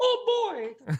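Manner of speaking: very high, cartoonish voice pitched way up. Joking with the others, quoting in a Mickey Mouse voice. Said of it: "I prefer to think like a Mickey Mouse".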